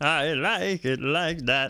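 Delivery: very slow, drawn-out frog puppet voice. Approving of a build, in a Kermit the Frog voice. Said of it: "Why I gotta go all Kermit the Frog".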